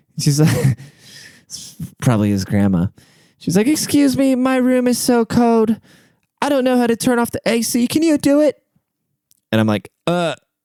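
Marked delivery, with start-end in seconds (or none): 3.7-8.6 put-on British accent, pitched very high. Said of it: "And she had a British accent".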